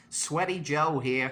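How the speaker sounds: put-on slow, drawn-out American accent. Showing one of the speaker's old TikTok characters, an American accent. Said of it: "kind of like American voice".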